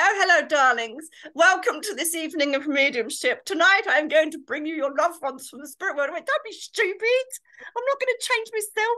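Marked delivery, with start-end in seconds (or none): 0.0-6.1 fake upper-class posh accent in stage voice. Stage medium acting out the posh act the audience expected: mock posh voice. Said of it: "we thought you were going to be posh".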